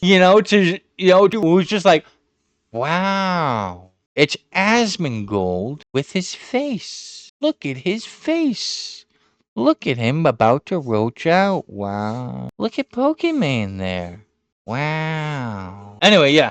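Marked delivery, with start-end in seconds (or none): 2.7-16.0 play-acted, lazy, uninterested, drawn-out sing-song tone. Retelling how a streamer reacted to a video: imitating a half-assed reaction. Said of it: "just half-assed fucking just reacted".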